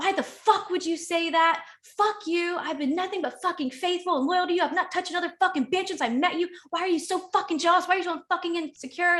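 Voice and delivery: acted, high screaming at the top of the lungs. Recounting a man screaming at the speaker at the top of his lungs, retelling a scream. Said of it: "He screams at me at the top of his lungs".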